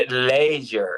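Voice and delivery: Scottish pronunciation. Saying a word the way they say it in Scotland, Scottish accent. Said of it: "As they say in Scotland".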